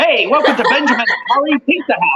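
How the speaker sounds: put-on ugly clashing jumble of Cockney, Spanish and Chinese accents. Retelling the restaurant greeting he performed before being stopped, ugly mixed accent. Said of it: "the ugliest Cockney Spanish Chinese accent mix".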